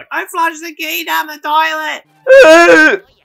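high, loud, slow wail. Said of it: "He's like".

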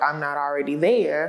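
plain

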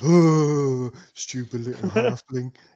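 loud, slow, lumbering troll voice, "oh" stretched long. Voicing the troll as it sneers at a halfling: voicing the troll. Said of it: "The troll just goes".

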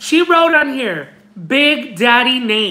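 acted-out shout. Acting out a man in a packed post office calling out, retelling a yell. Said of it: "he yells out".

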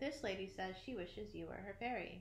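ordinary talk

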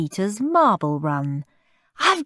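ordinary delivery, nothing marked

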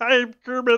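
very high, loud frog puppet voice. Asked for their best Kermit, a speaker answers in a Kermit the Frog voice. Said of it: "Give me your best Kermit".

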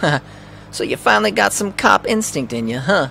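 put-on New York Brooklyn accent. A character greets someone who turns out to be on the case: brooklyn accent. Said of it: "Could try going with Brooklyn".

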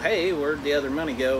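normal talking voice

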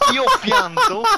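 laughing hard, high-pitched, loud laughing outburst.

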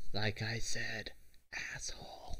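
slow, hushed whisper to one side. Holding a hand up, a character says this to her: whisper. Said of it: "try to whisper that to her".

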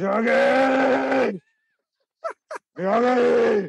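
mock growl and yell at once, very high, drawn out. Imitating how a character calls out someone's name, imitating a growling yell. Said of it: "He's like growling, yelling at the same time".

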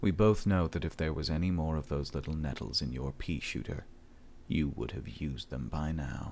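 low, flat, emotionless, dead-level monotone. Narrator reading a man's taunt to Jen, his tone flat and emotionless. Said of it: "his tone entirely flat and emotionless".

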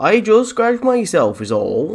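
put-on rustic West Country accent. Repeating what he just said to mock how he sounds, in a West Country accent. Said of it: "He sounds a little bit like he's from the bloody West Country".

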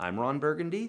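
Burgundy rises at the end like a question. Example of a line with a question mark at the end: rising question on burgundy. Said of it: "There's a question mark at the end".

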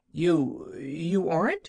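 stammering in dismay. A little girl learns the woman is Nancy, not Aunt Polly, stammering in dismay. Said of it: "stammered the little girl in plain dismay".

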